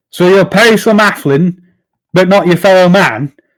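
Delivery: furious, high screaming in rage. Voicing a character who storms across a tavern and erupts at another, furious screaming. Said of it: "as he begins screaming at Philippe".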